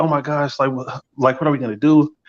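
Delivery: play-acted frantic, worried, panicked, flustered blurting. Retelling what the girl in the bathroom said: imitating someone panicking. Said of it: "she's all, like, panicking".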